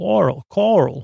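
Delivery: poor Long Island accent. Giving a Ronkonkoma shout-out, trying a bad Long Island accent. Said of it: "That's not a good Long Island accent".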